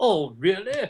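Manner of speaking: put-on British accent. Joking about Trump's real voice, speaker does Trump with a British accent. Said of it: "Because he's got like a British accent".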